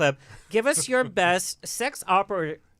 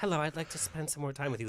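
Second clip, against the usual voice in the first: playful, soft, put-on seductive tone; 3 semitones lower, 9 dB quieter than usual. A self-described prudish speaker acts out a come-on she'd prefer, mock-sexy. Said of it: "That would be sexy".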